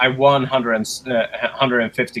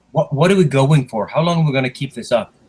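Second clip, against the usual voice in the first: whispered in a character voice; 3 semitones higher than usual. Leaning over to a crew member at the gambling table: whispering in character. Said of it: "I lean over to Jaeger and I whisper".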